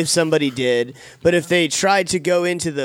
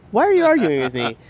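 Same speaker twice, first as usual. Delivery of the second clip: put-on angry voice, higher pitch; 5 semitones higher than usual. Retelling an argument with a dentist's staff member: imitating own angry retort. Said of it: "I was pissed".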